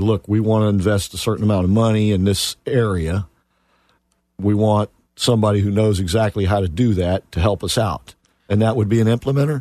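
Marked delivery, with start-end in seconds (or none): none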